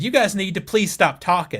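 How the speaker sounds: angry, pissed-off voice at full volume. Retelling telling a talking group in the theater to stop: retelling own loud pissed-off demand. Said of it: "my full volume said".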